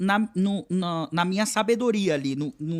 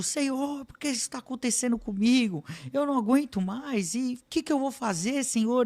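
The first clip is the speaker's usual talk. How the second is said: mock weeping, tearful, anguished crying out in despair; 4 semitones higher, 3 dB quieter than usual. Recounting the trip to Baixada Santista, calling to the Lord, retelling crying and shouting. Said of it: "chorando o caminho inteiro e gritando".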